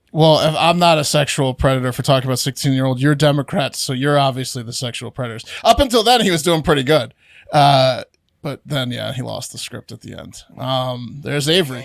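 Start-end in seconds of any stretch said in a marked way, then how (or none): none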